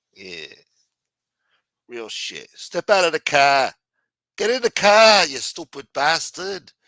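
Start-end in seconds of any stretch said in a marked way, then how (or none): 2.5-6.6 clumsy, botched Boston accent, loud. Told he probably has a boston accent, the speaker tries an attempted boston accent. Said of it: "You probably got a Boston accent too".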